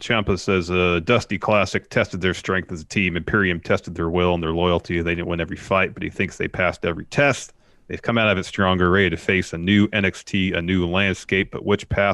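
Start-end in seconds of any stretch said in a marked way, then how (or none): none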